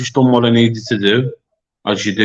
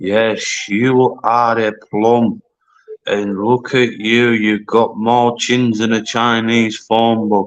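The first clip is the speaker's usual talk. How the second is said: very slow, deliberate, drawn-out, belittling mocking drawl. Asked how he deals with them, a speaker demonstrates: talking very slowly. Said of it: "just talk very slow like this".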